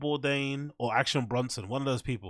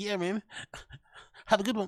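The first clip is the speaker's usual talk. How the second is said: pitched-up, matey, blokey lad voice; 8 semitones higher than usual. Mocking the voice Chin uses with other guys, in his lad voice. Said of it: "What is that voice he does?".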